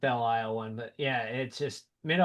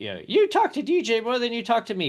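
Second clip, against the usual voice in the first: very high, swooping, griping, complaining voice; 10 semitones higher, 4 dB louder than usual. Speaker acts out what the woman laughing in the other room says, impression of her. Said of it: "Apologies for the impression".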